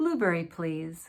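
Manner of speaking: falling statement intonation, drops on please. Teaching intonation, answering a choice question as a statement: falling intonation. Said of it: "This is a falling intonation".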